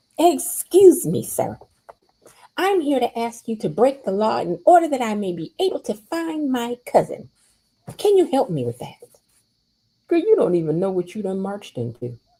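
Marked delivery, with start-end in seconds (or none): 0.2-9.0 put-on entitled rich voice, pitched higher. Retelling Kat marching into the casino: imitating Kat acting rich. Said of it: "acting like she".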